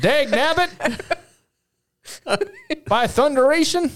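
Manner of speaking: put-on very high, swooping, sing-song old-timey prospector voice. Teasing Ryan about how he sometimes talks, in an old timey prospector voice. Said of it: "sometimes you talk like an old timey prospector".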